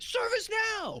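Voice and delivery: put-on, very high-pitched, shrill shout. Retelling a stranger on a cruise deck calling out: imitating a yell. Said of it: "somebody would yell that".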